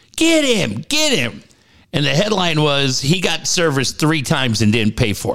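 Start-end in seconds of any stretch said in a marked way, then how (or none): 0.2-1.5 mock high, drawn-out shouted yell. Retelling a story of a woman chasing a man down the street: retelling a woman's yell. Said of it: "she's yelling".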